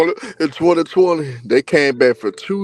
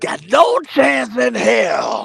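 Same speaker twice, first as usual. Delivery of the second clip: rasping, slow, swooping announcer drawl, "hell" stretched; 8 semitones higher than usual. Speaker slips into a bit he calls his Vince McMahon voice. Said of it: "In my Vince McMahon voice".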